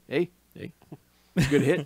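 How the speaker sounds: easygoing put-on Canadian accent. Describing a golf narrator, mimicking Canadian friends. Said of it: "like your Canadian friends".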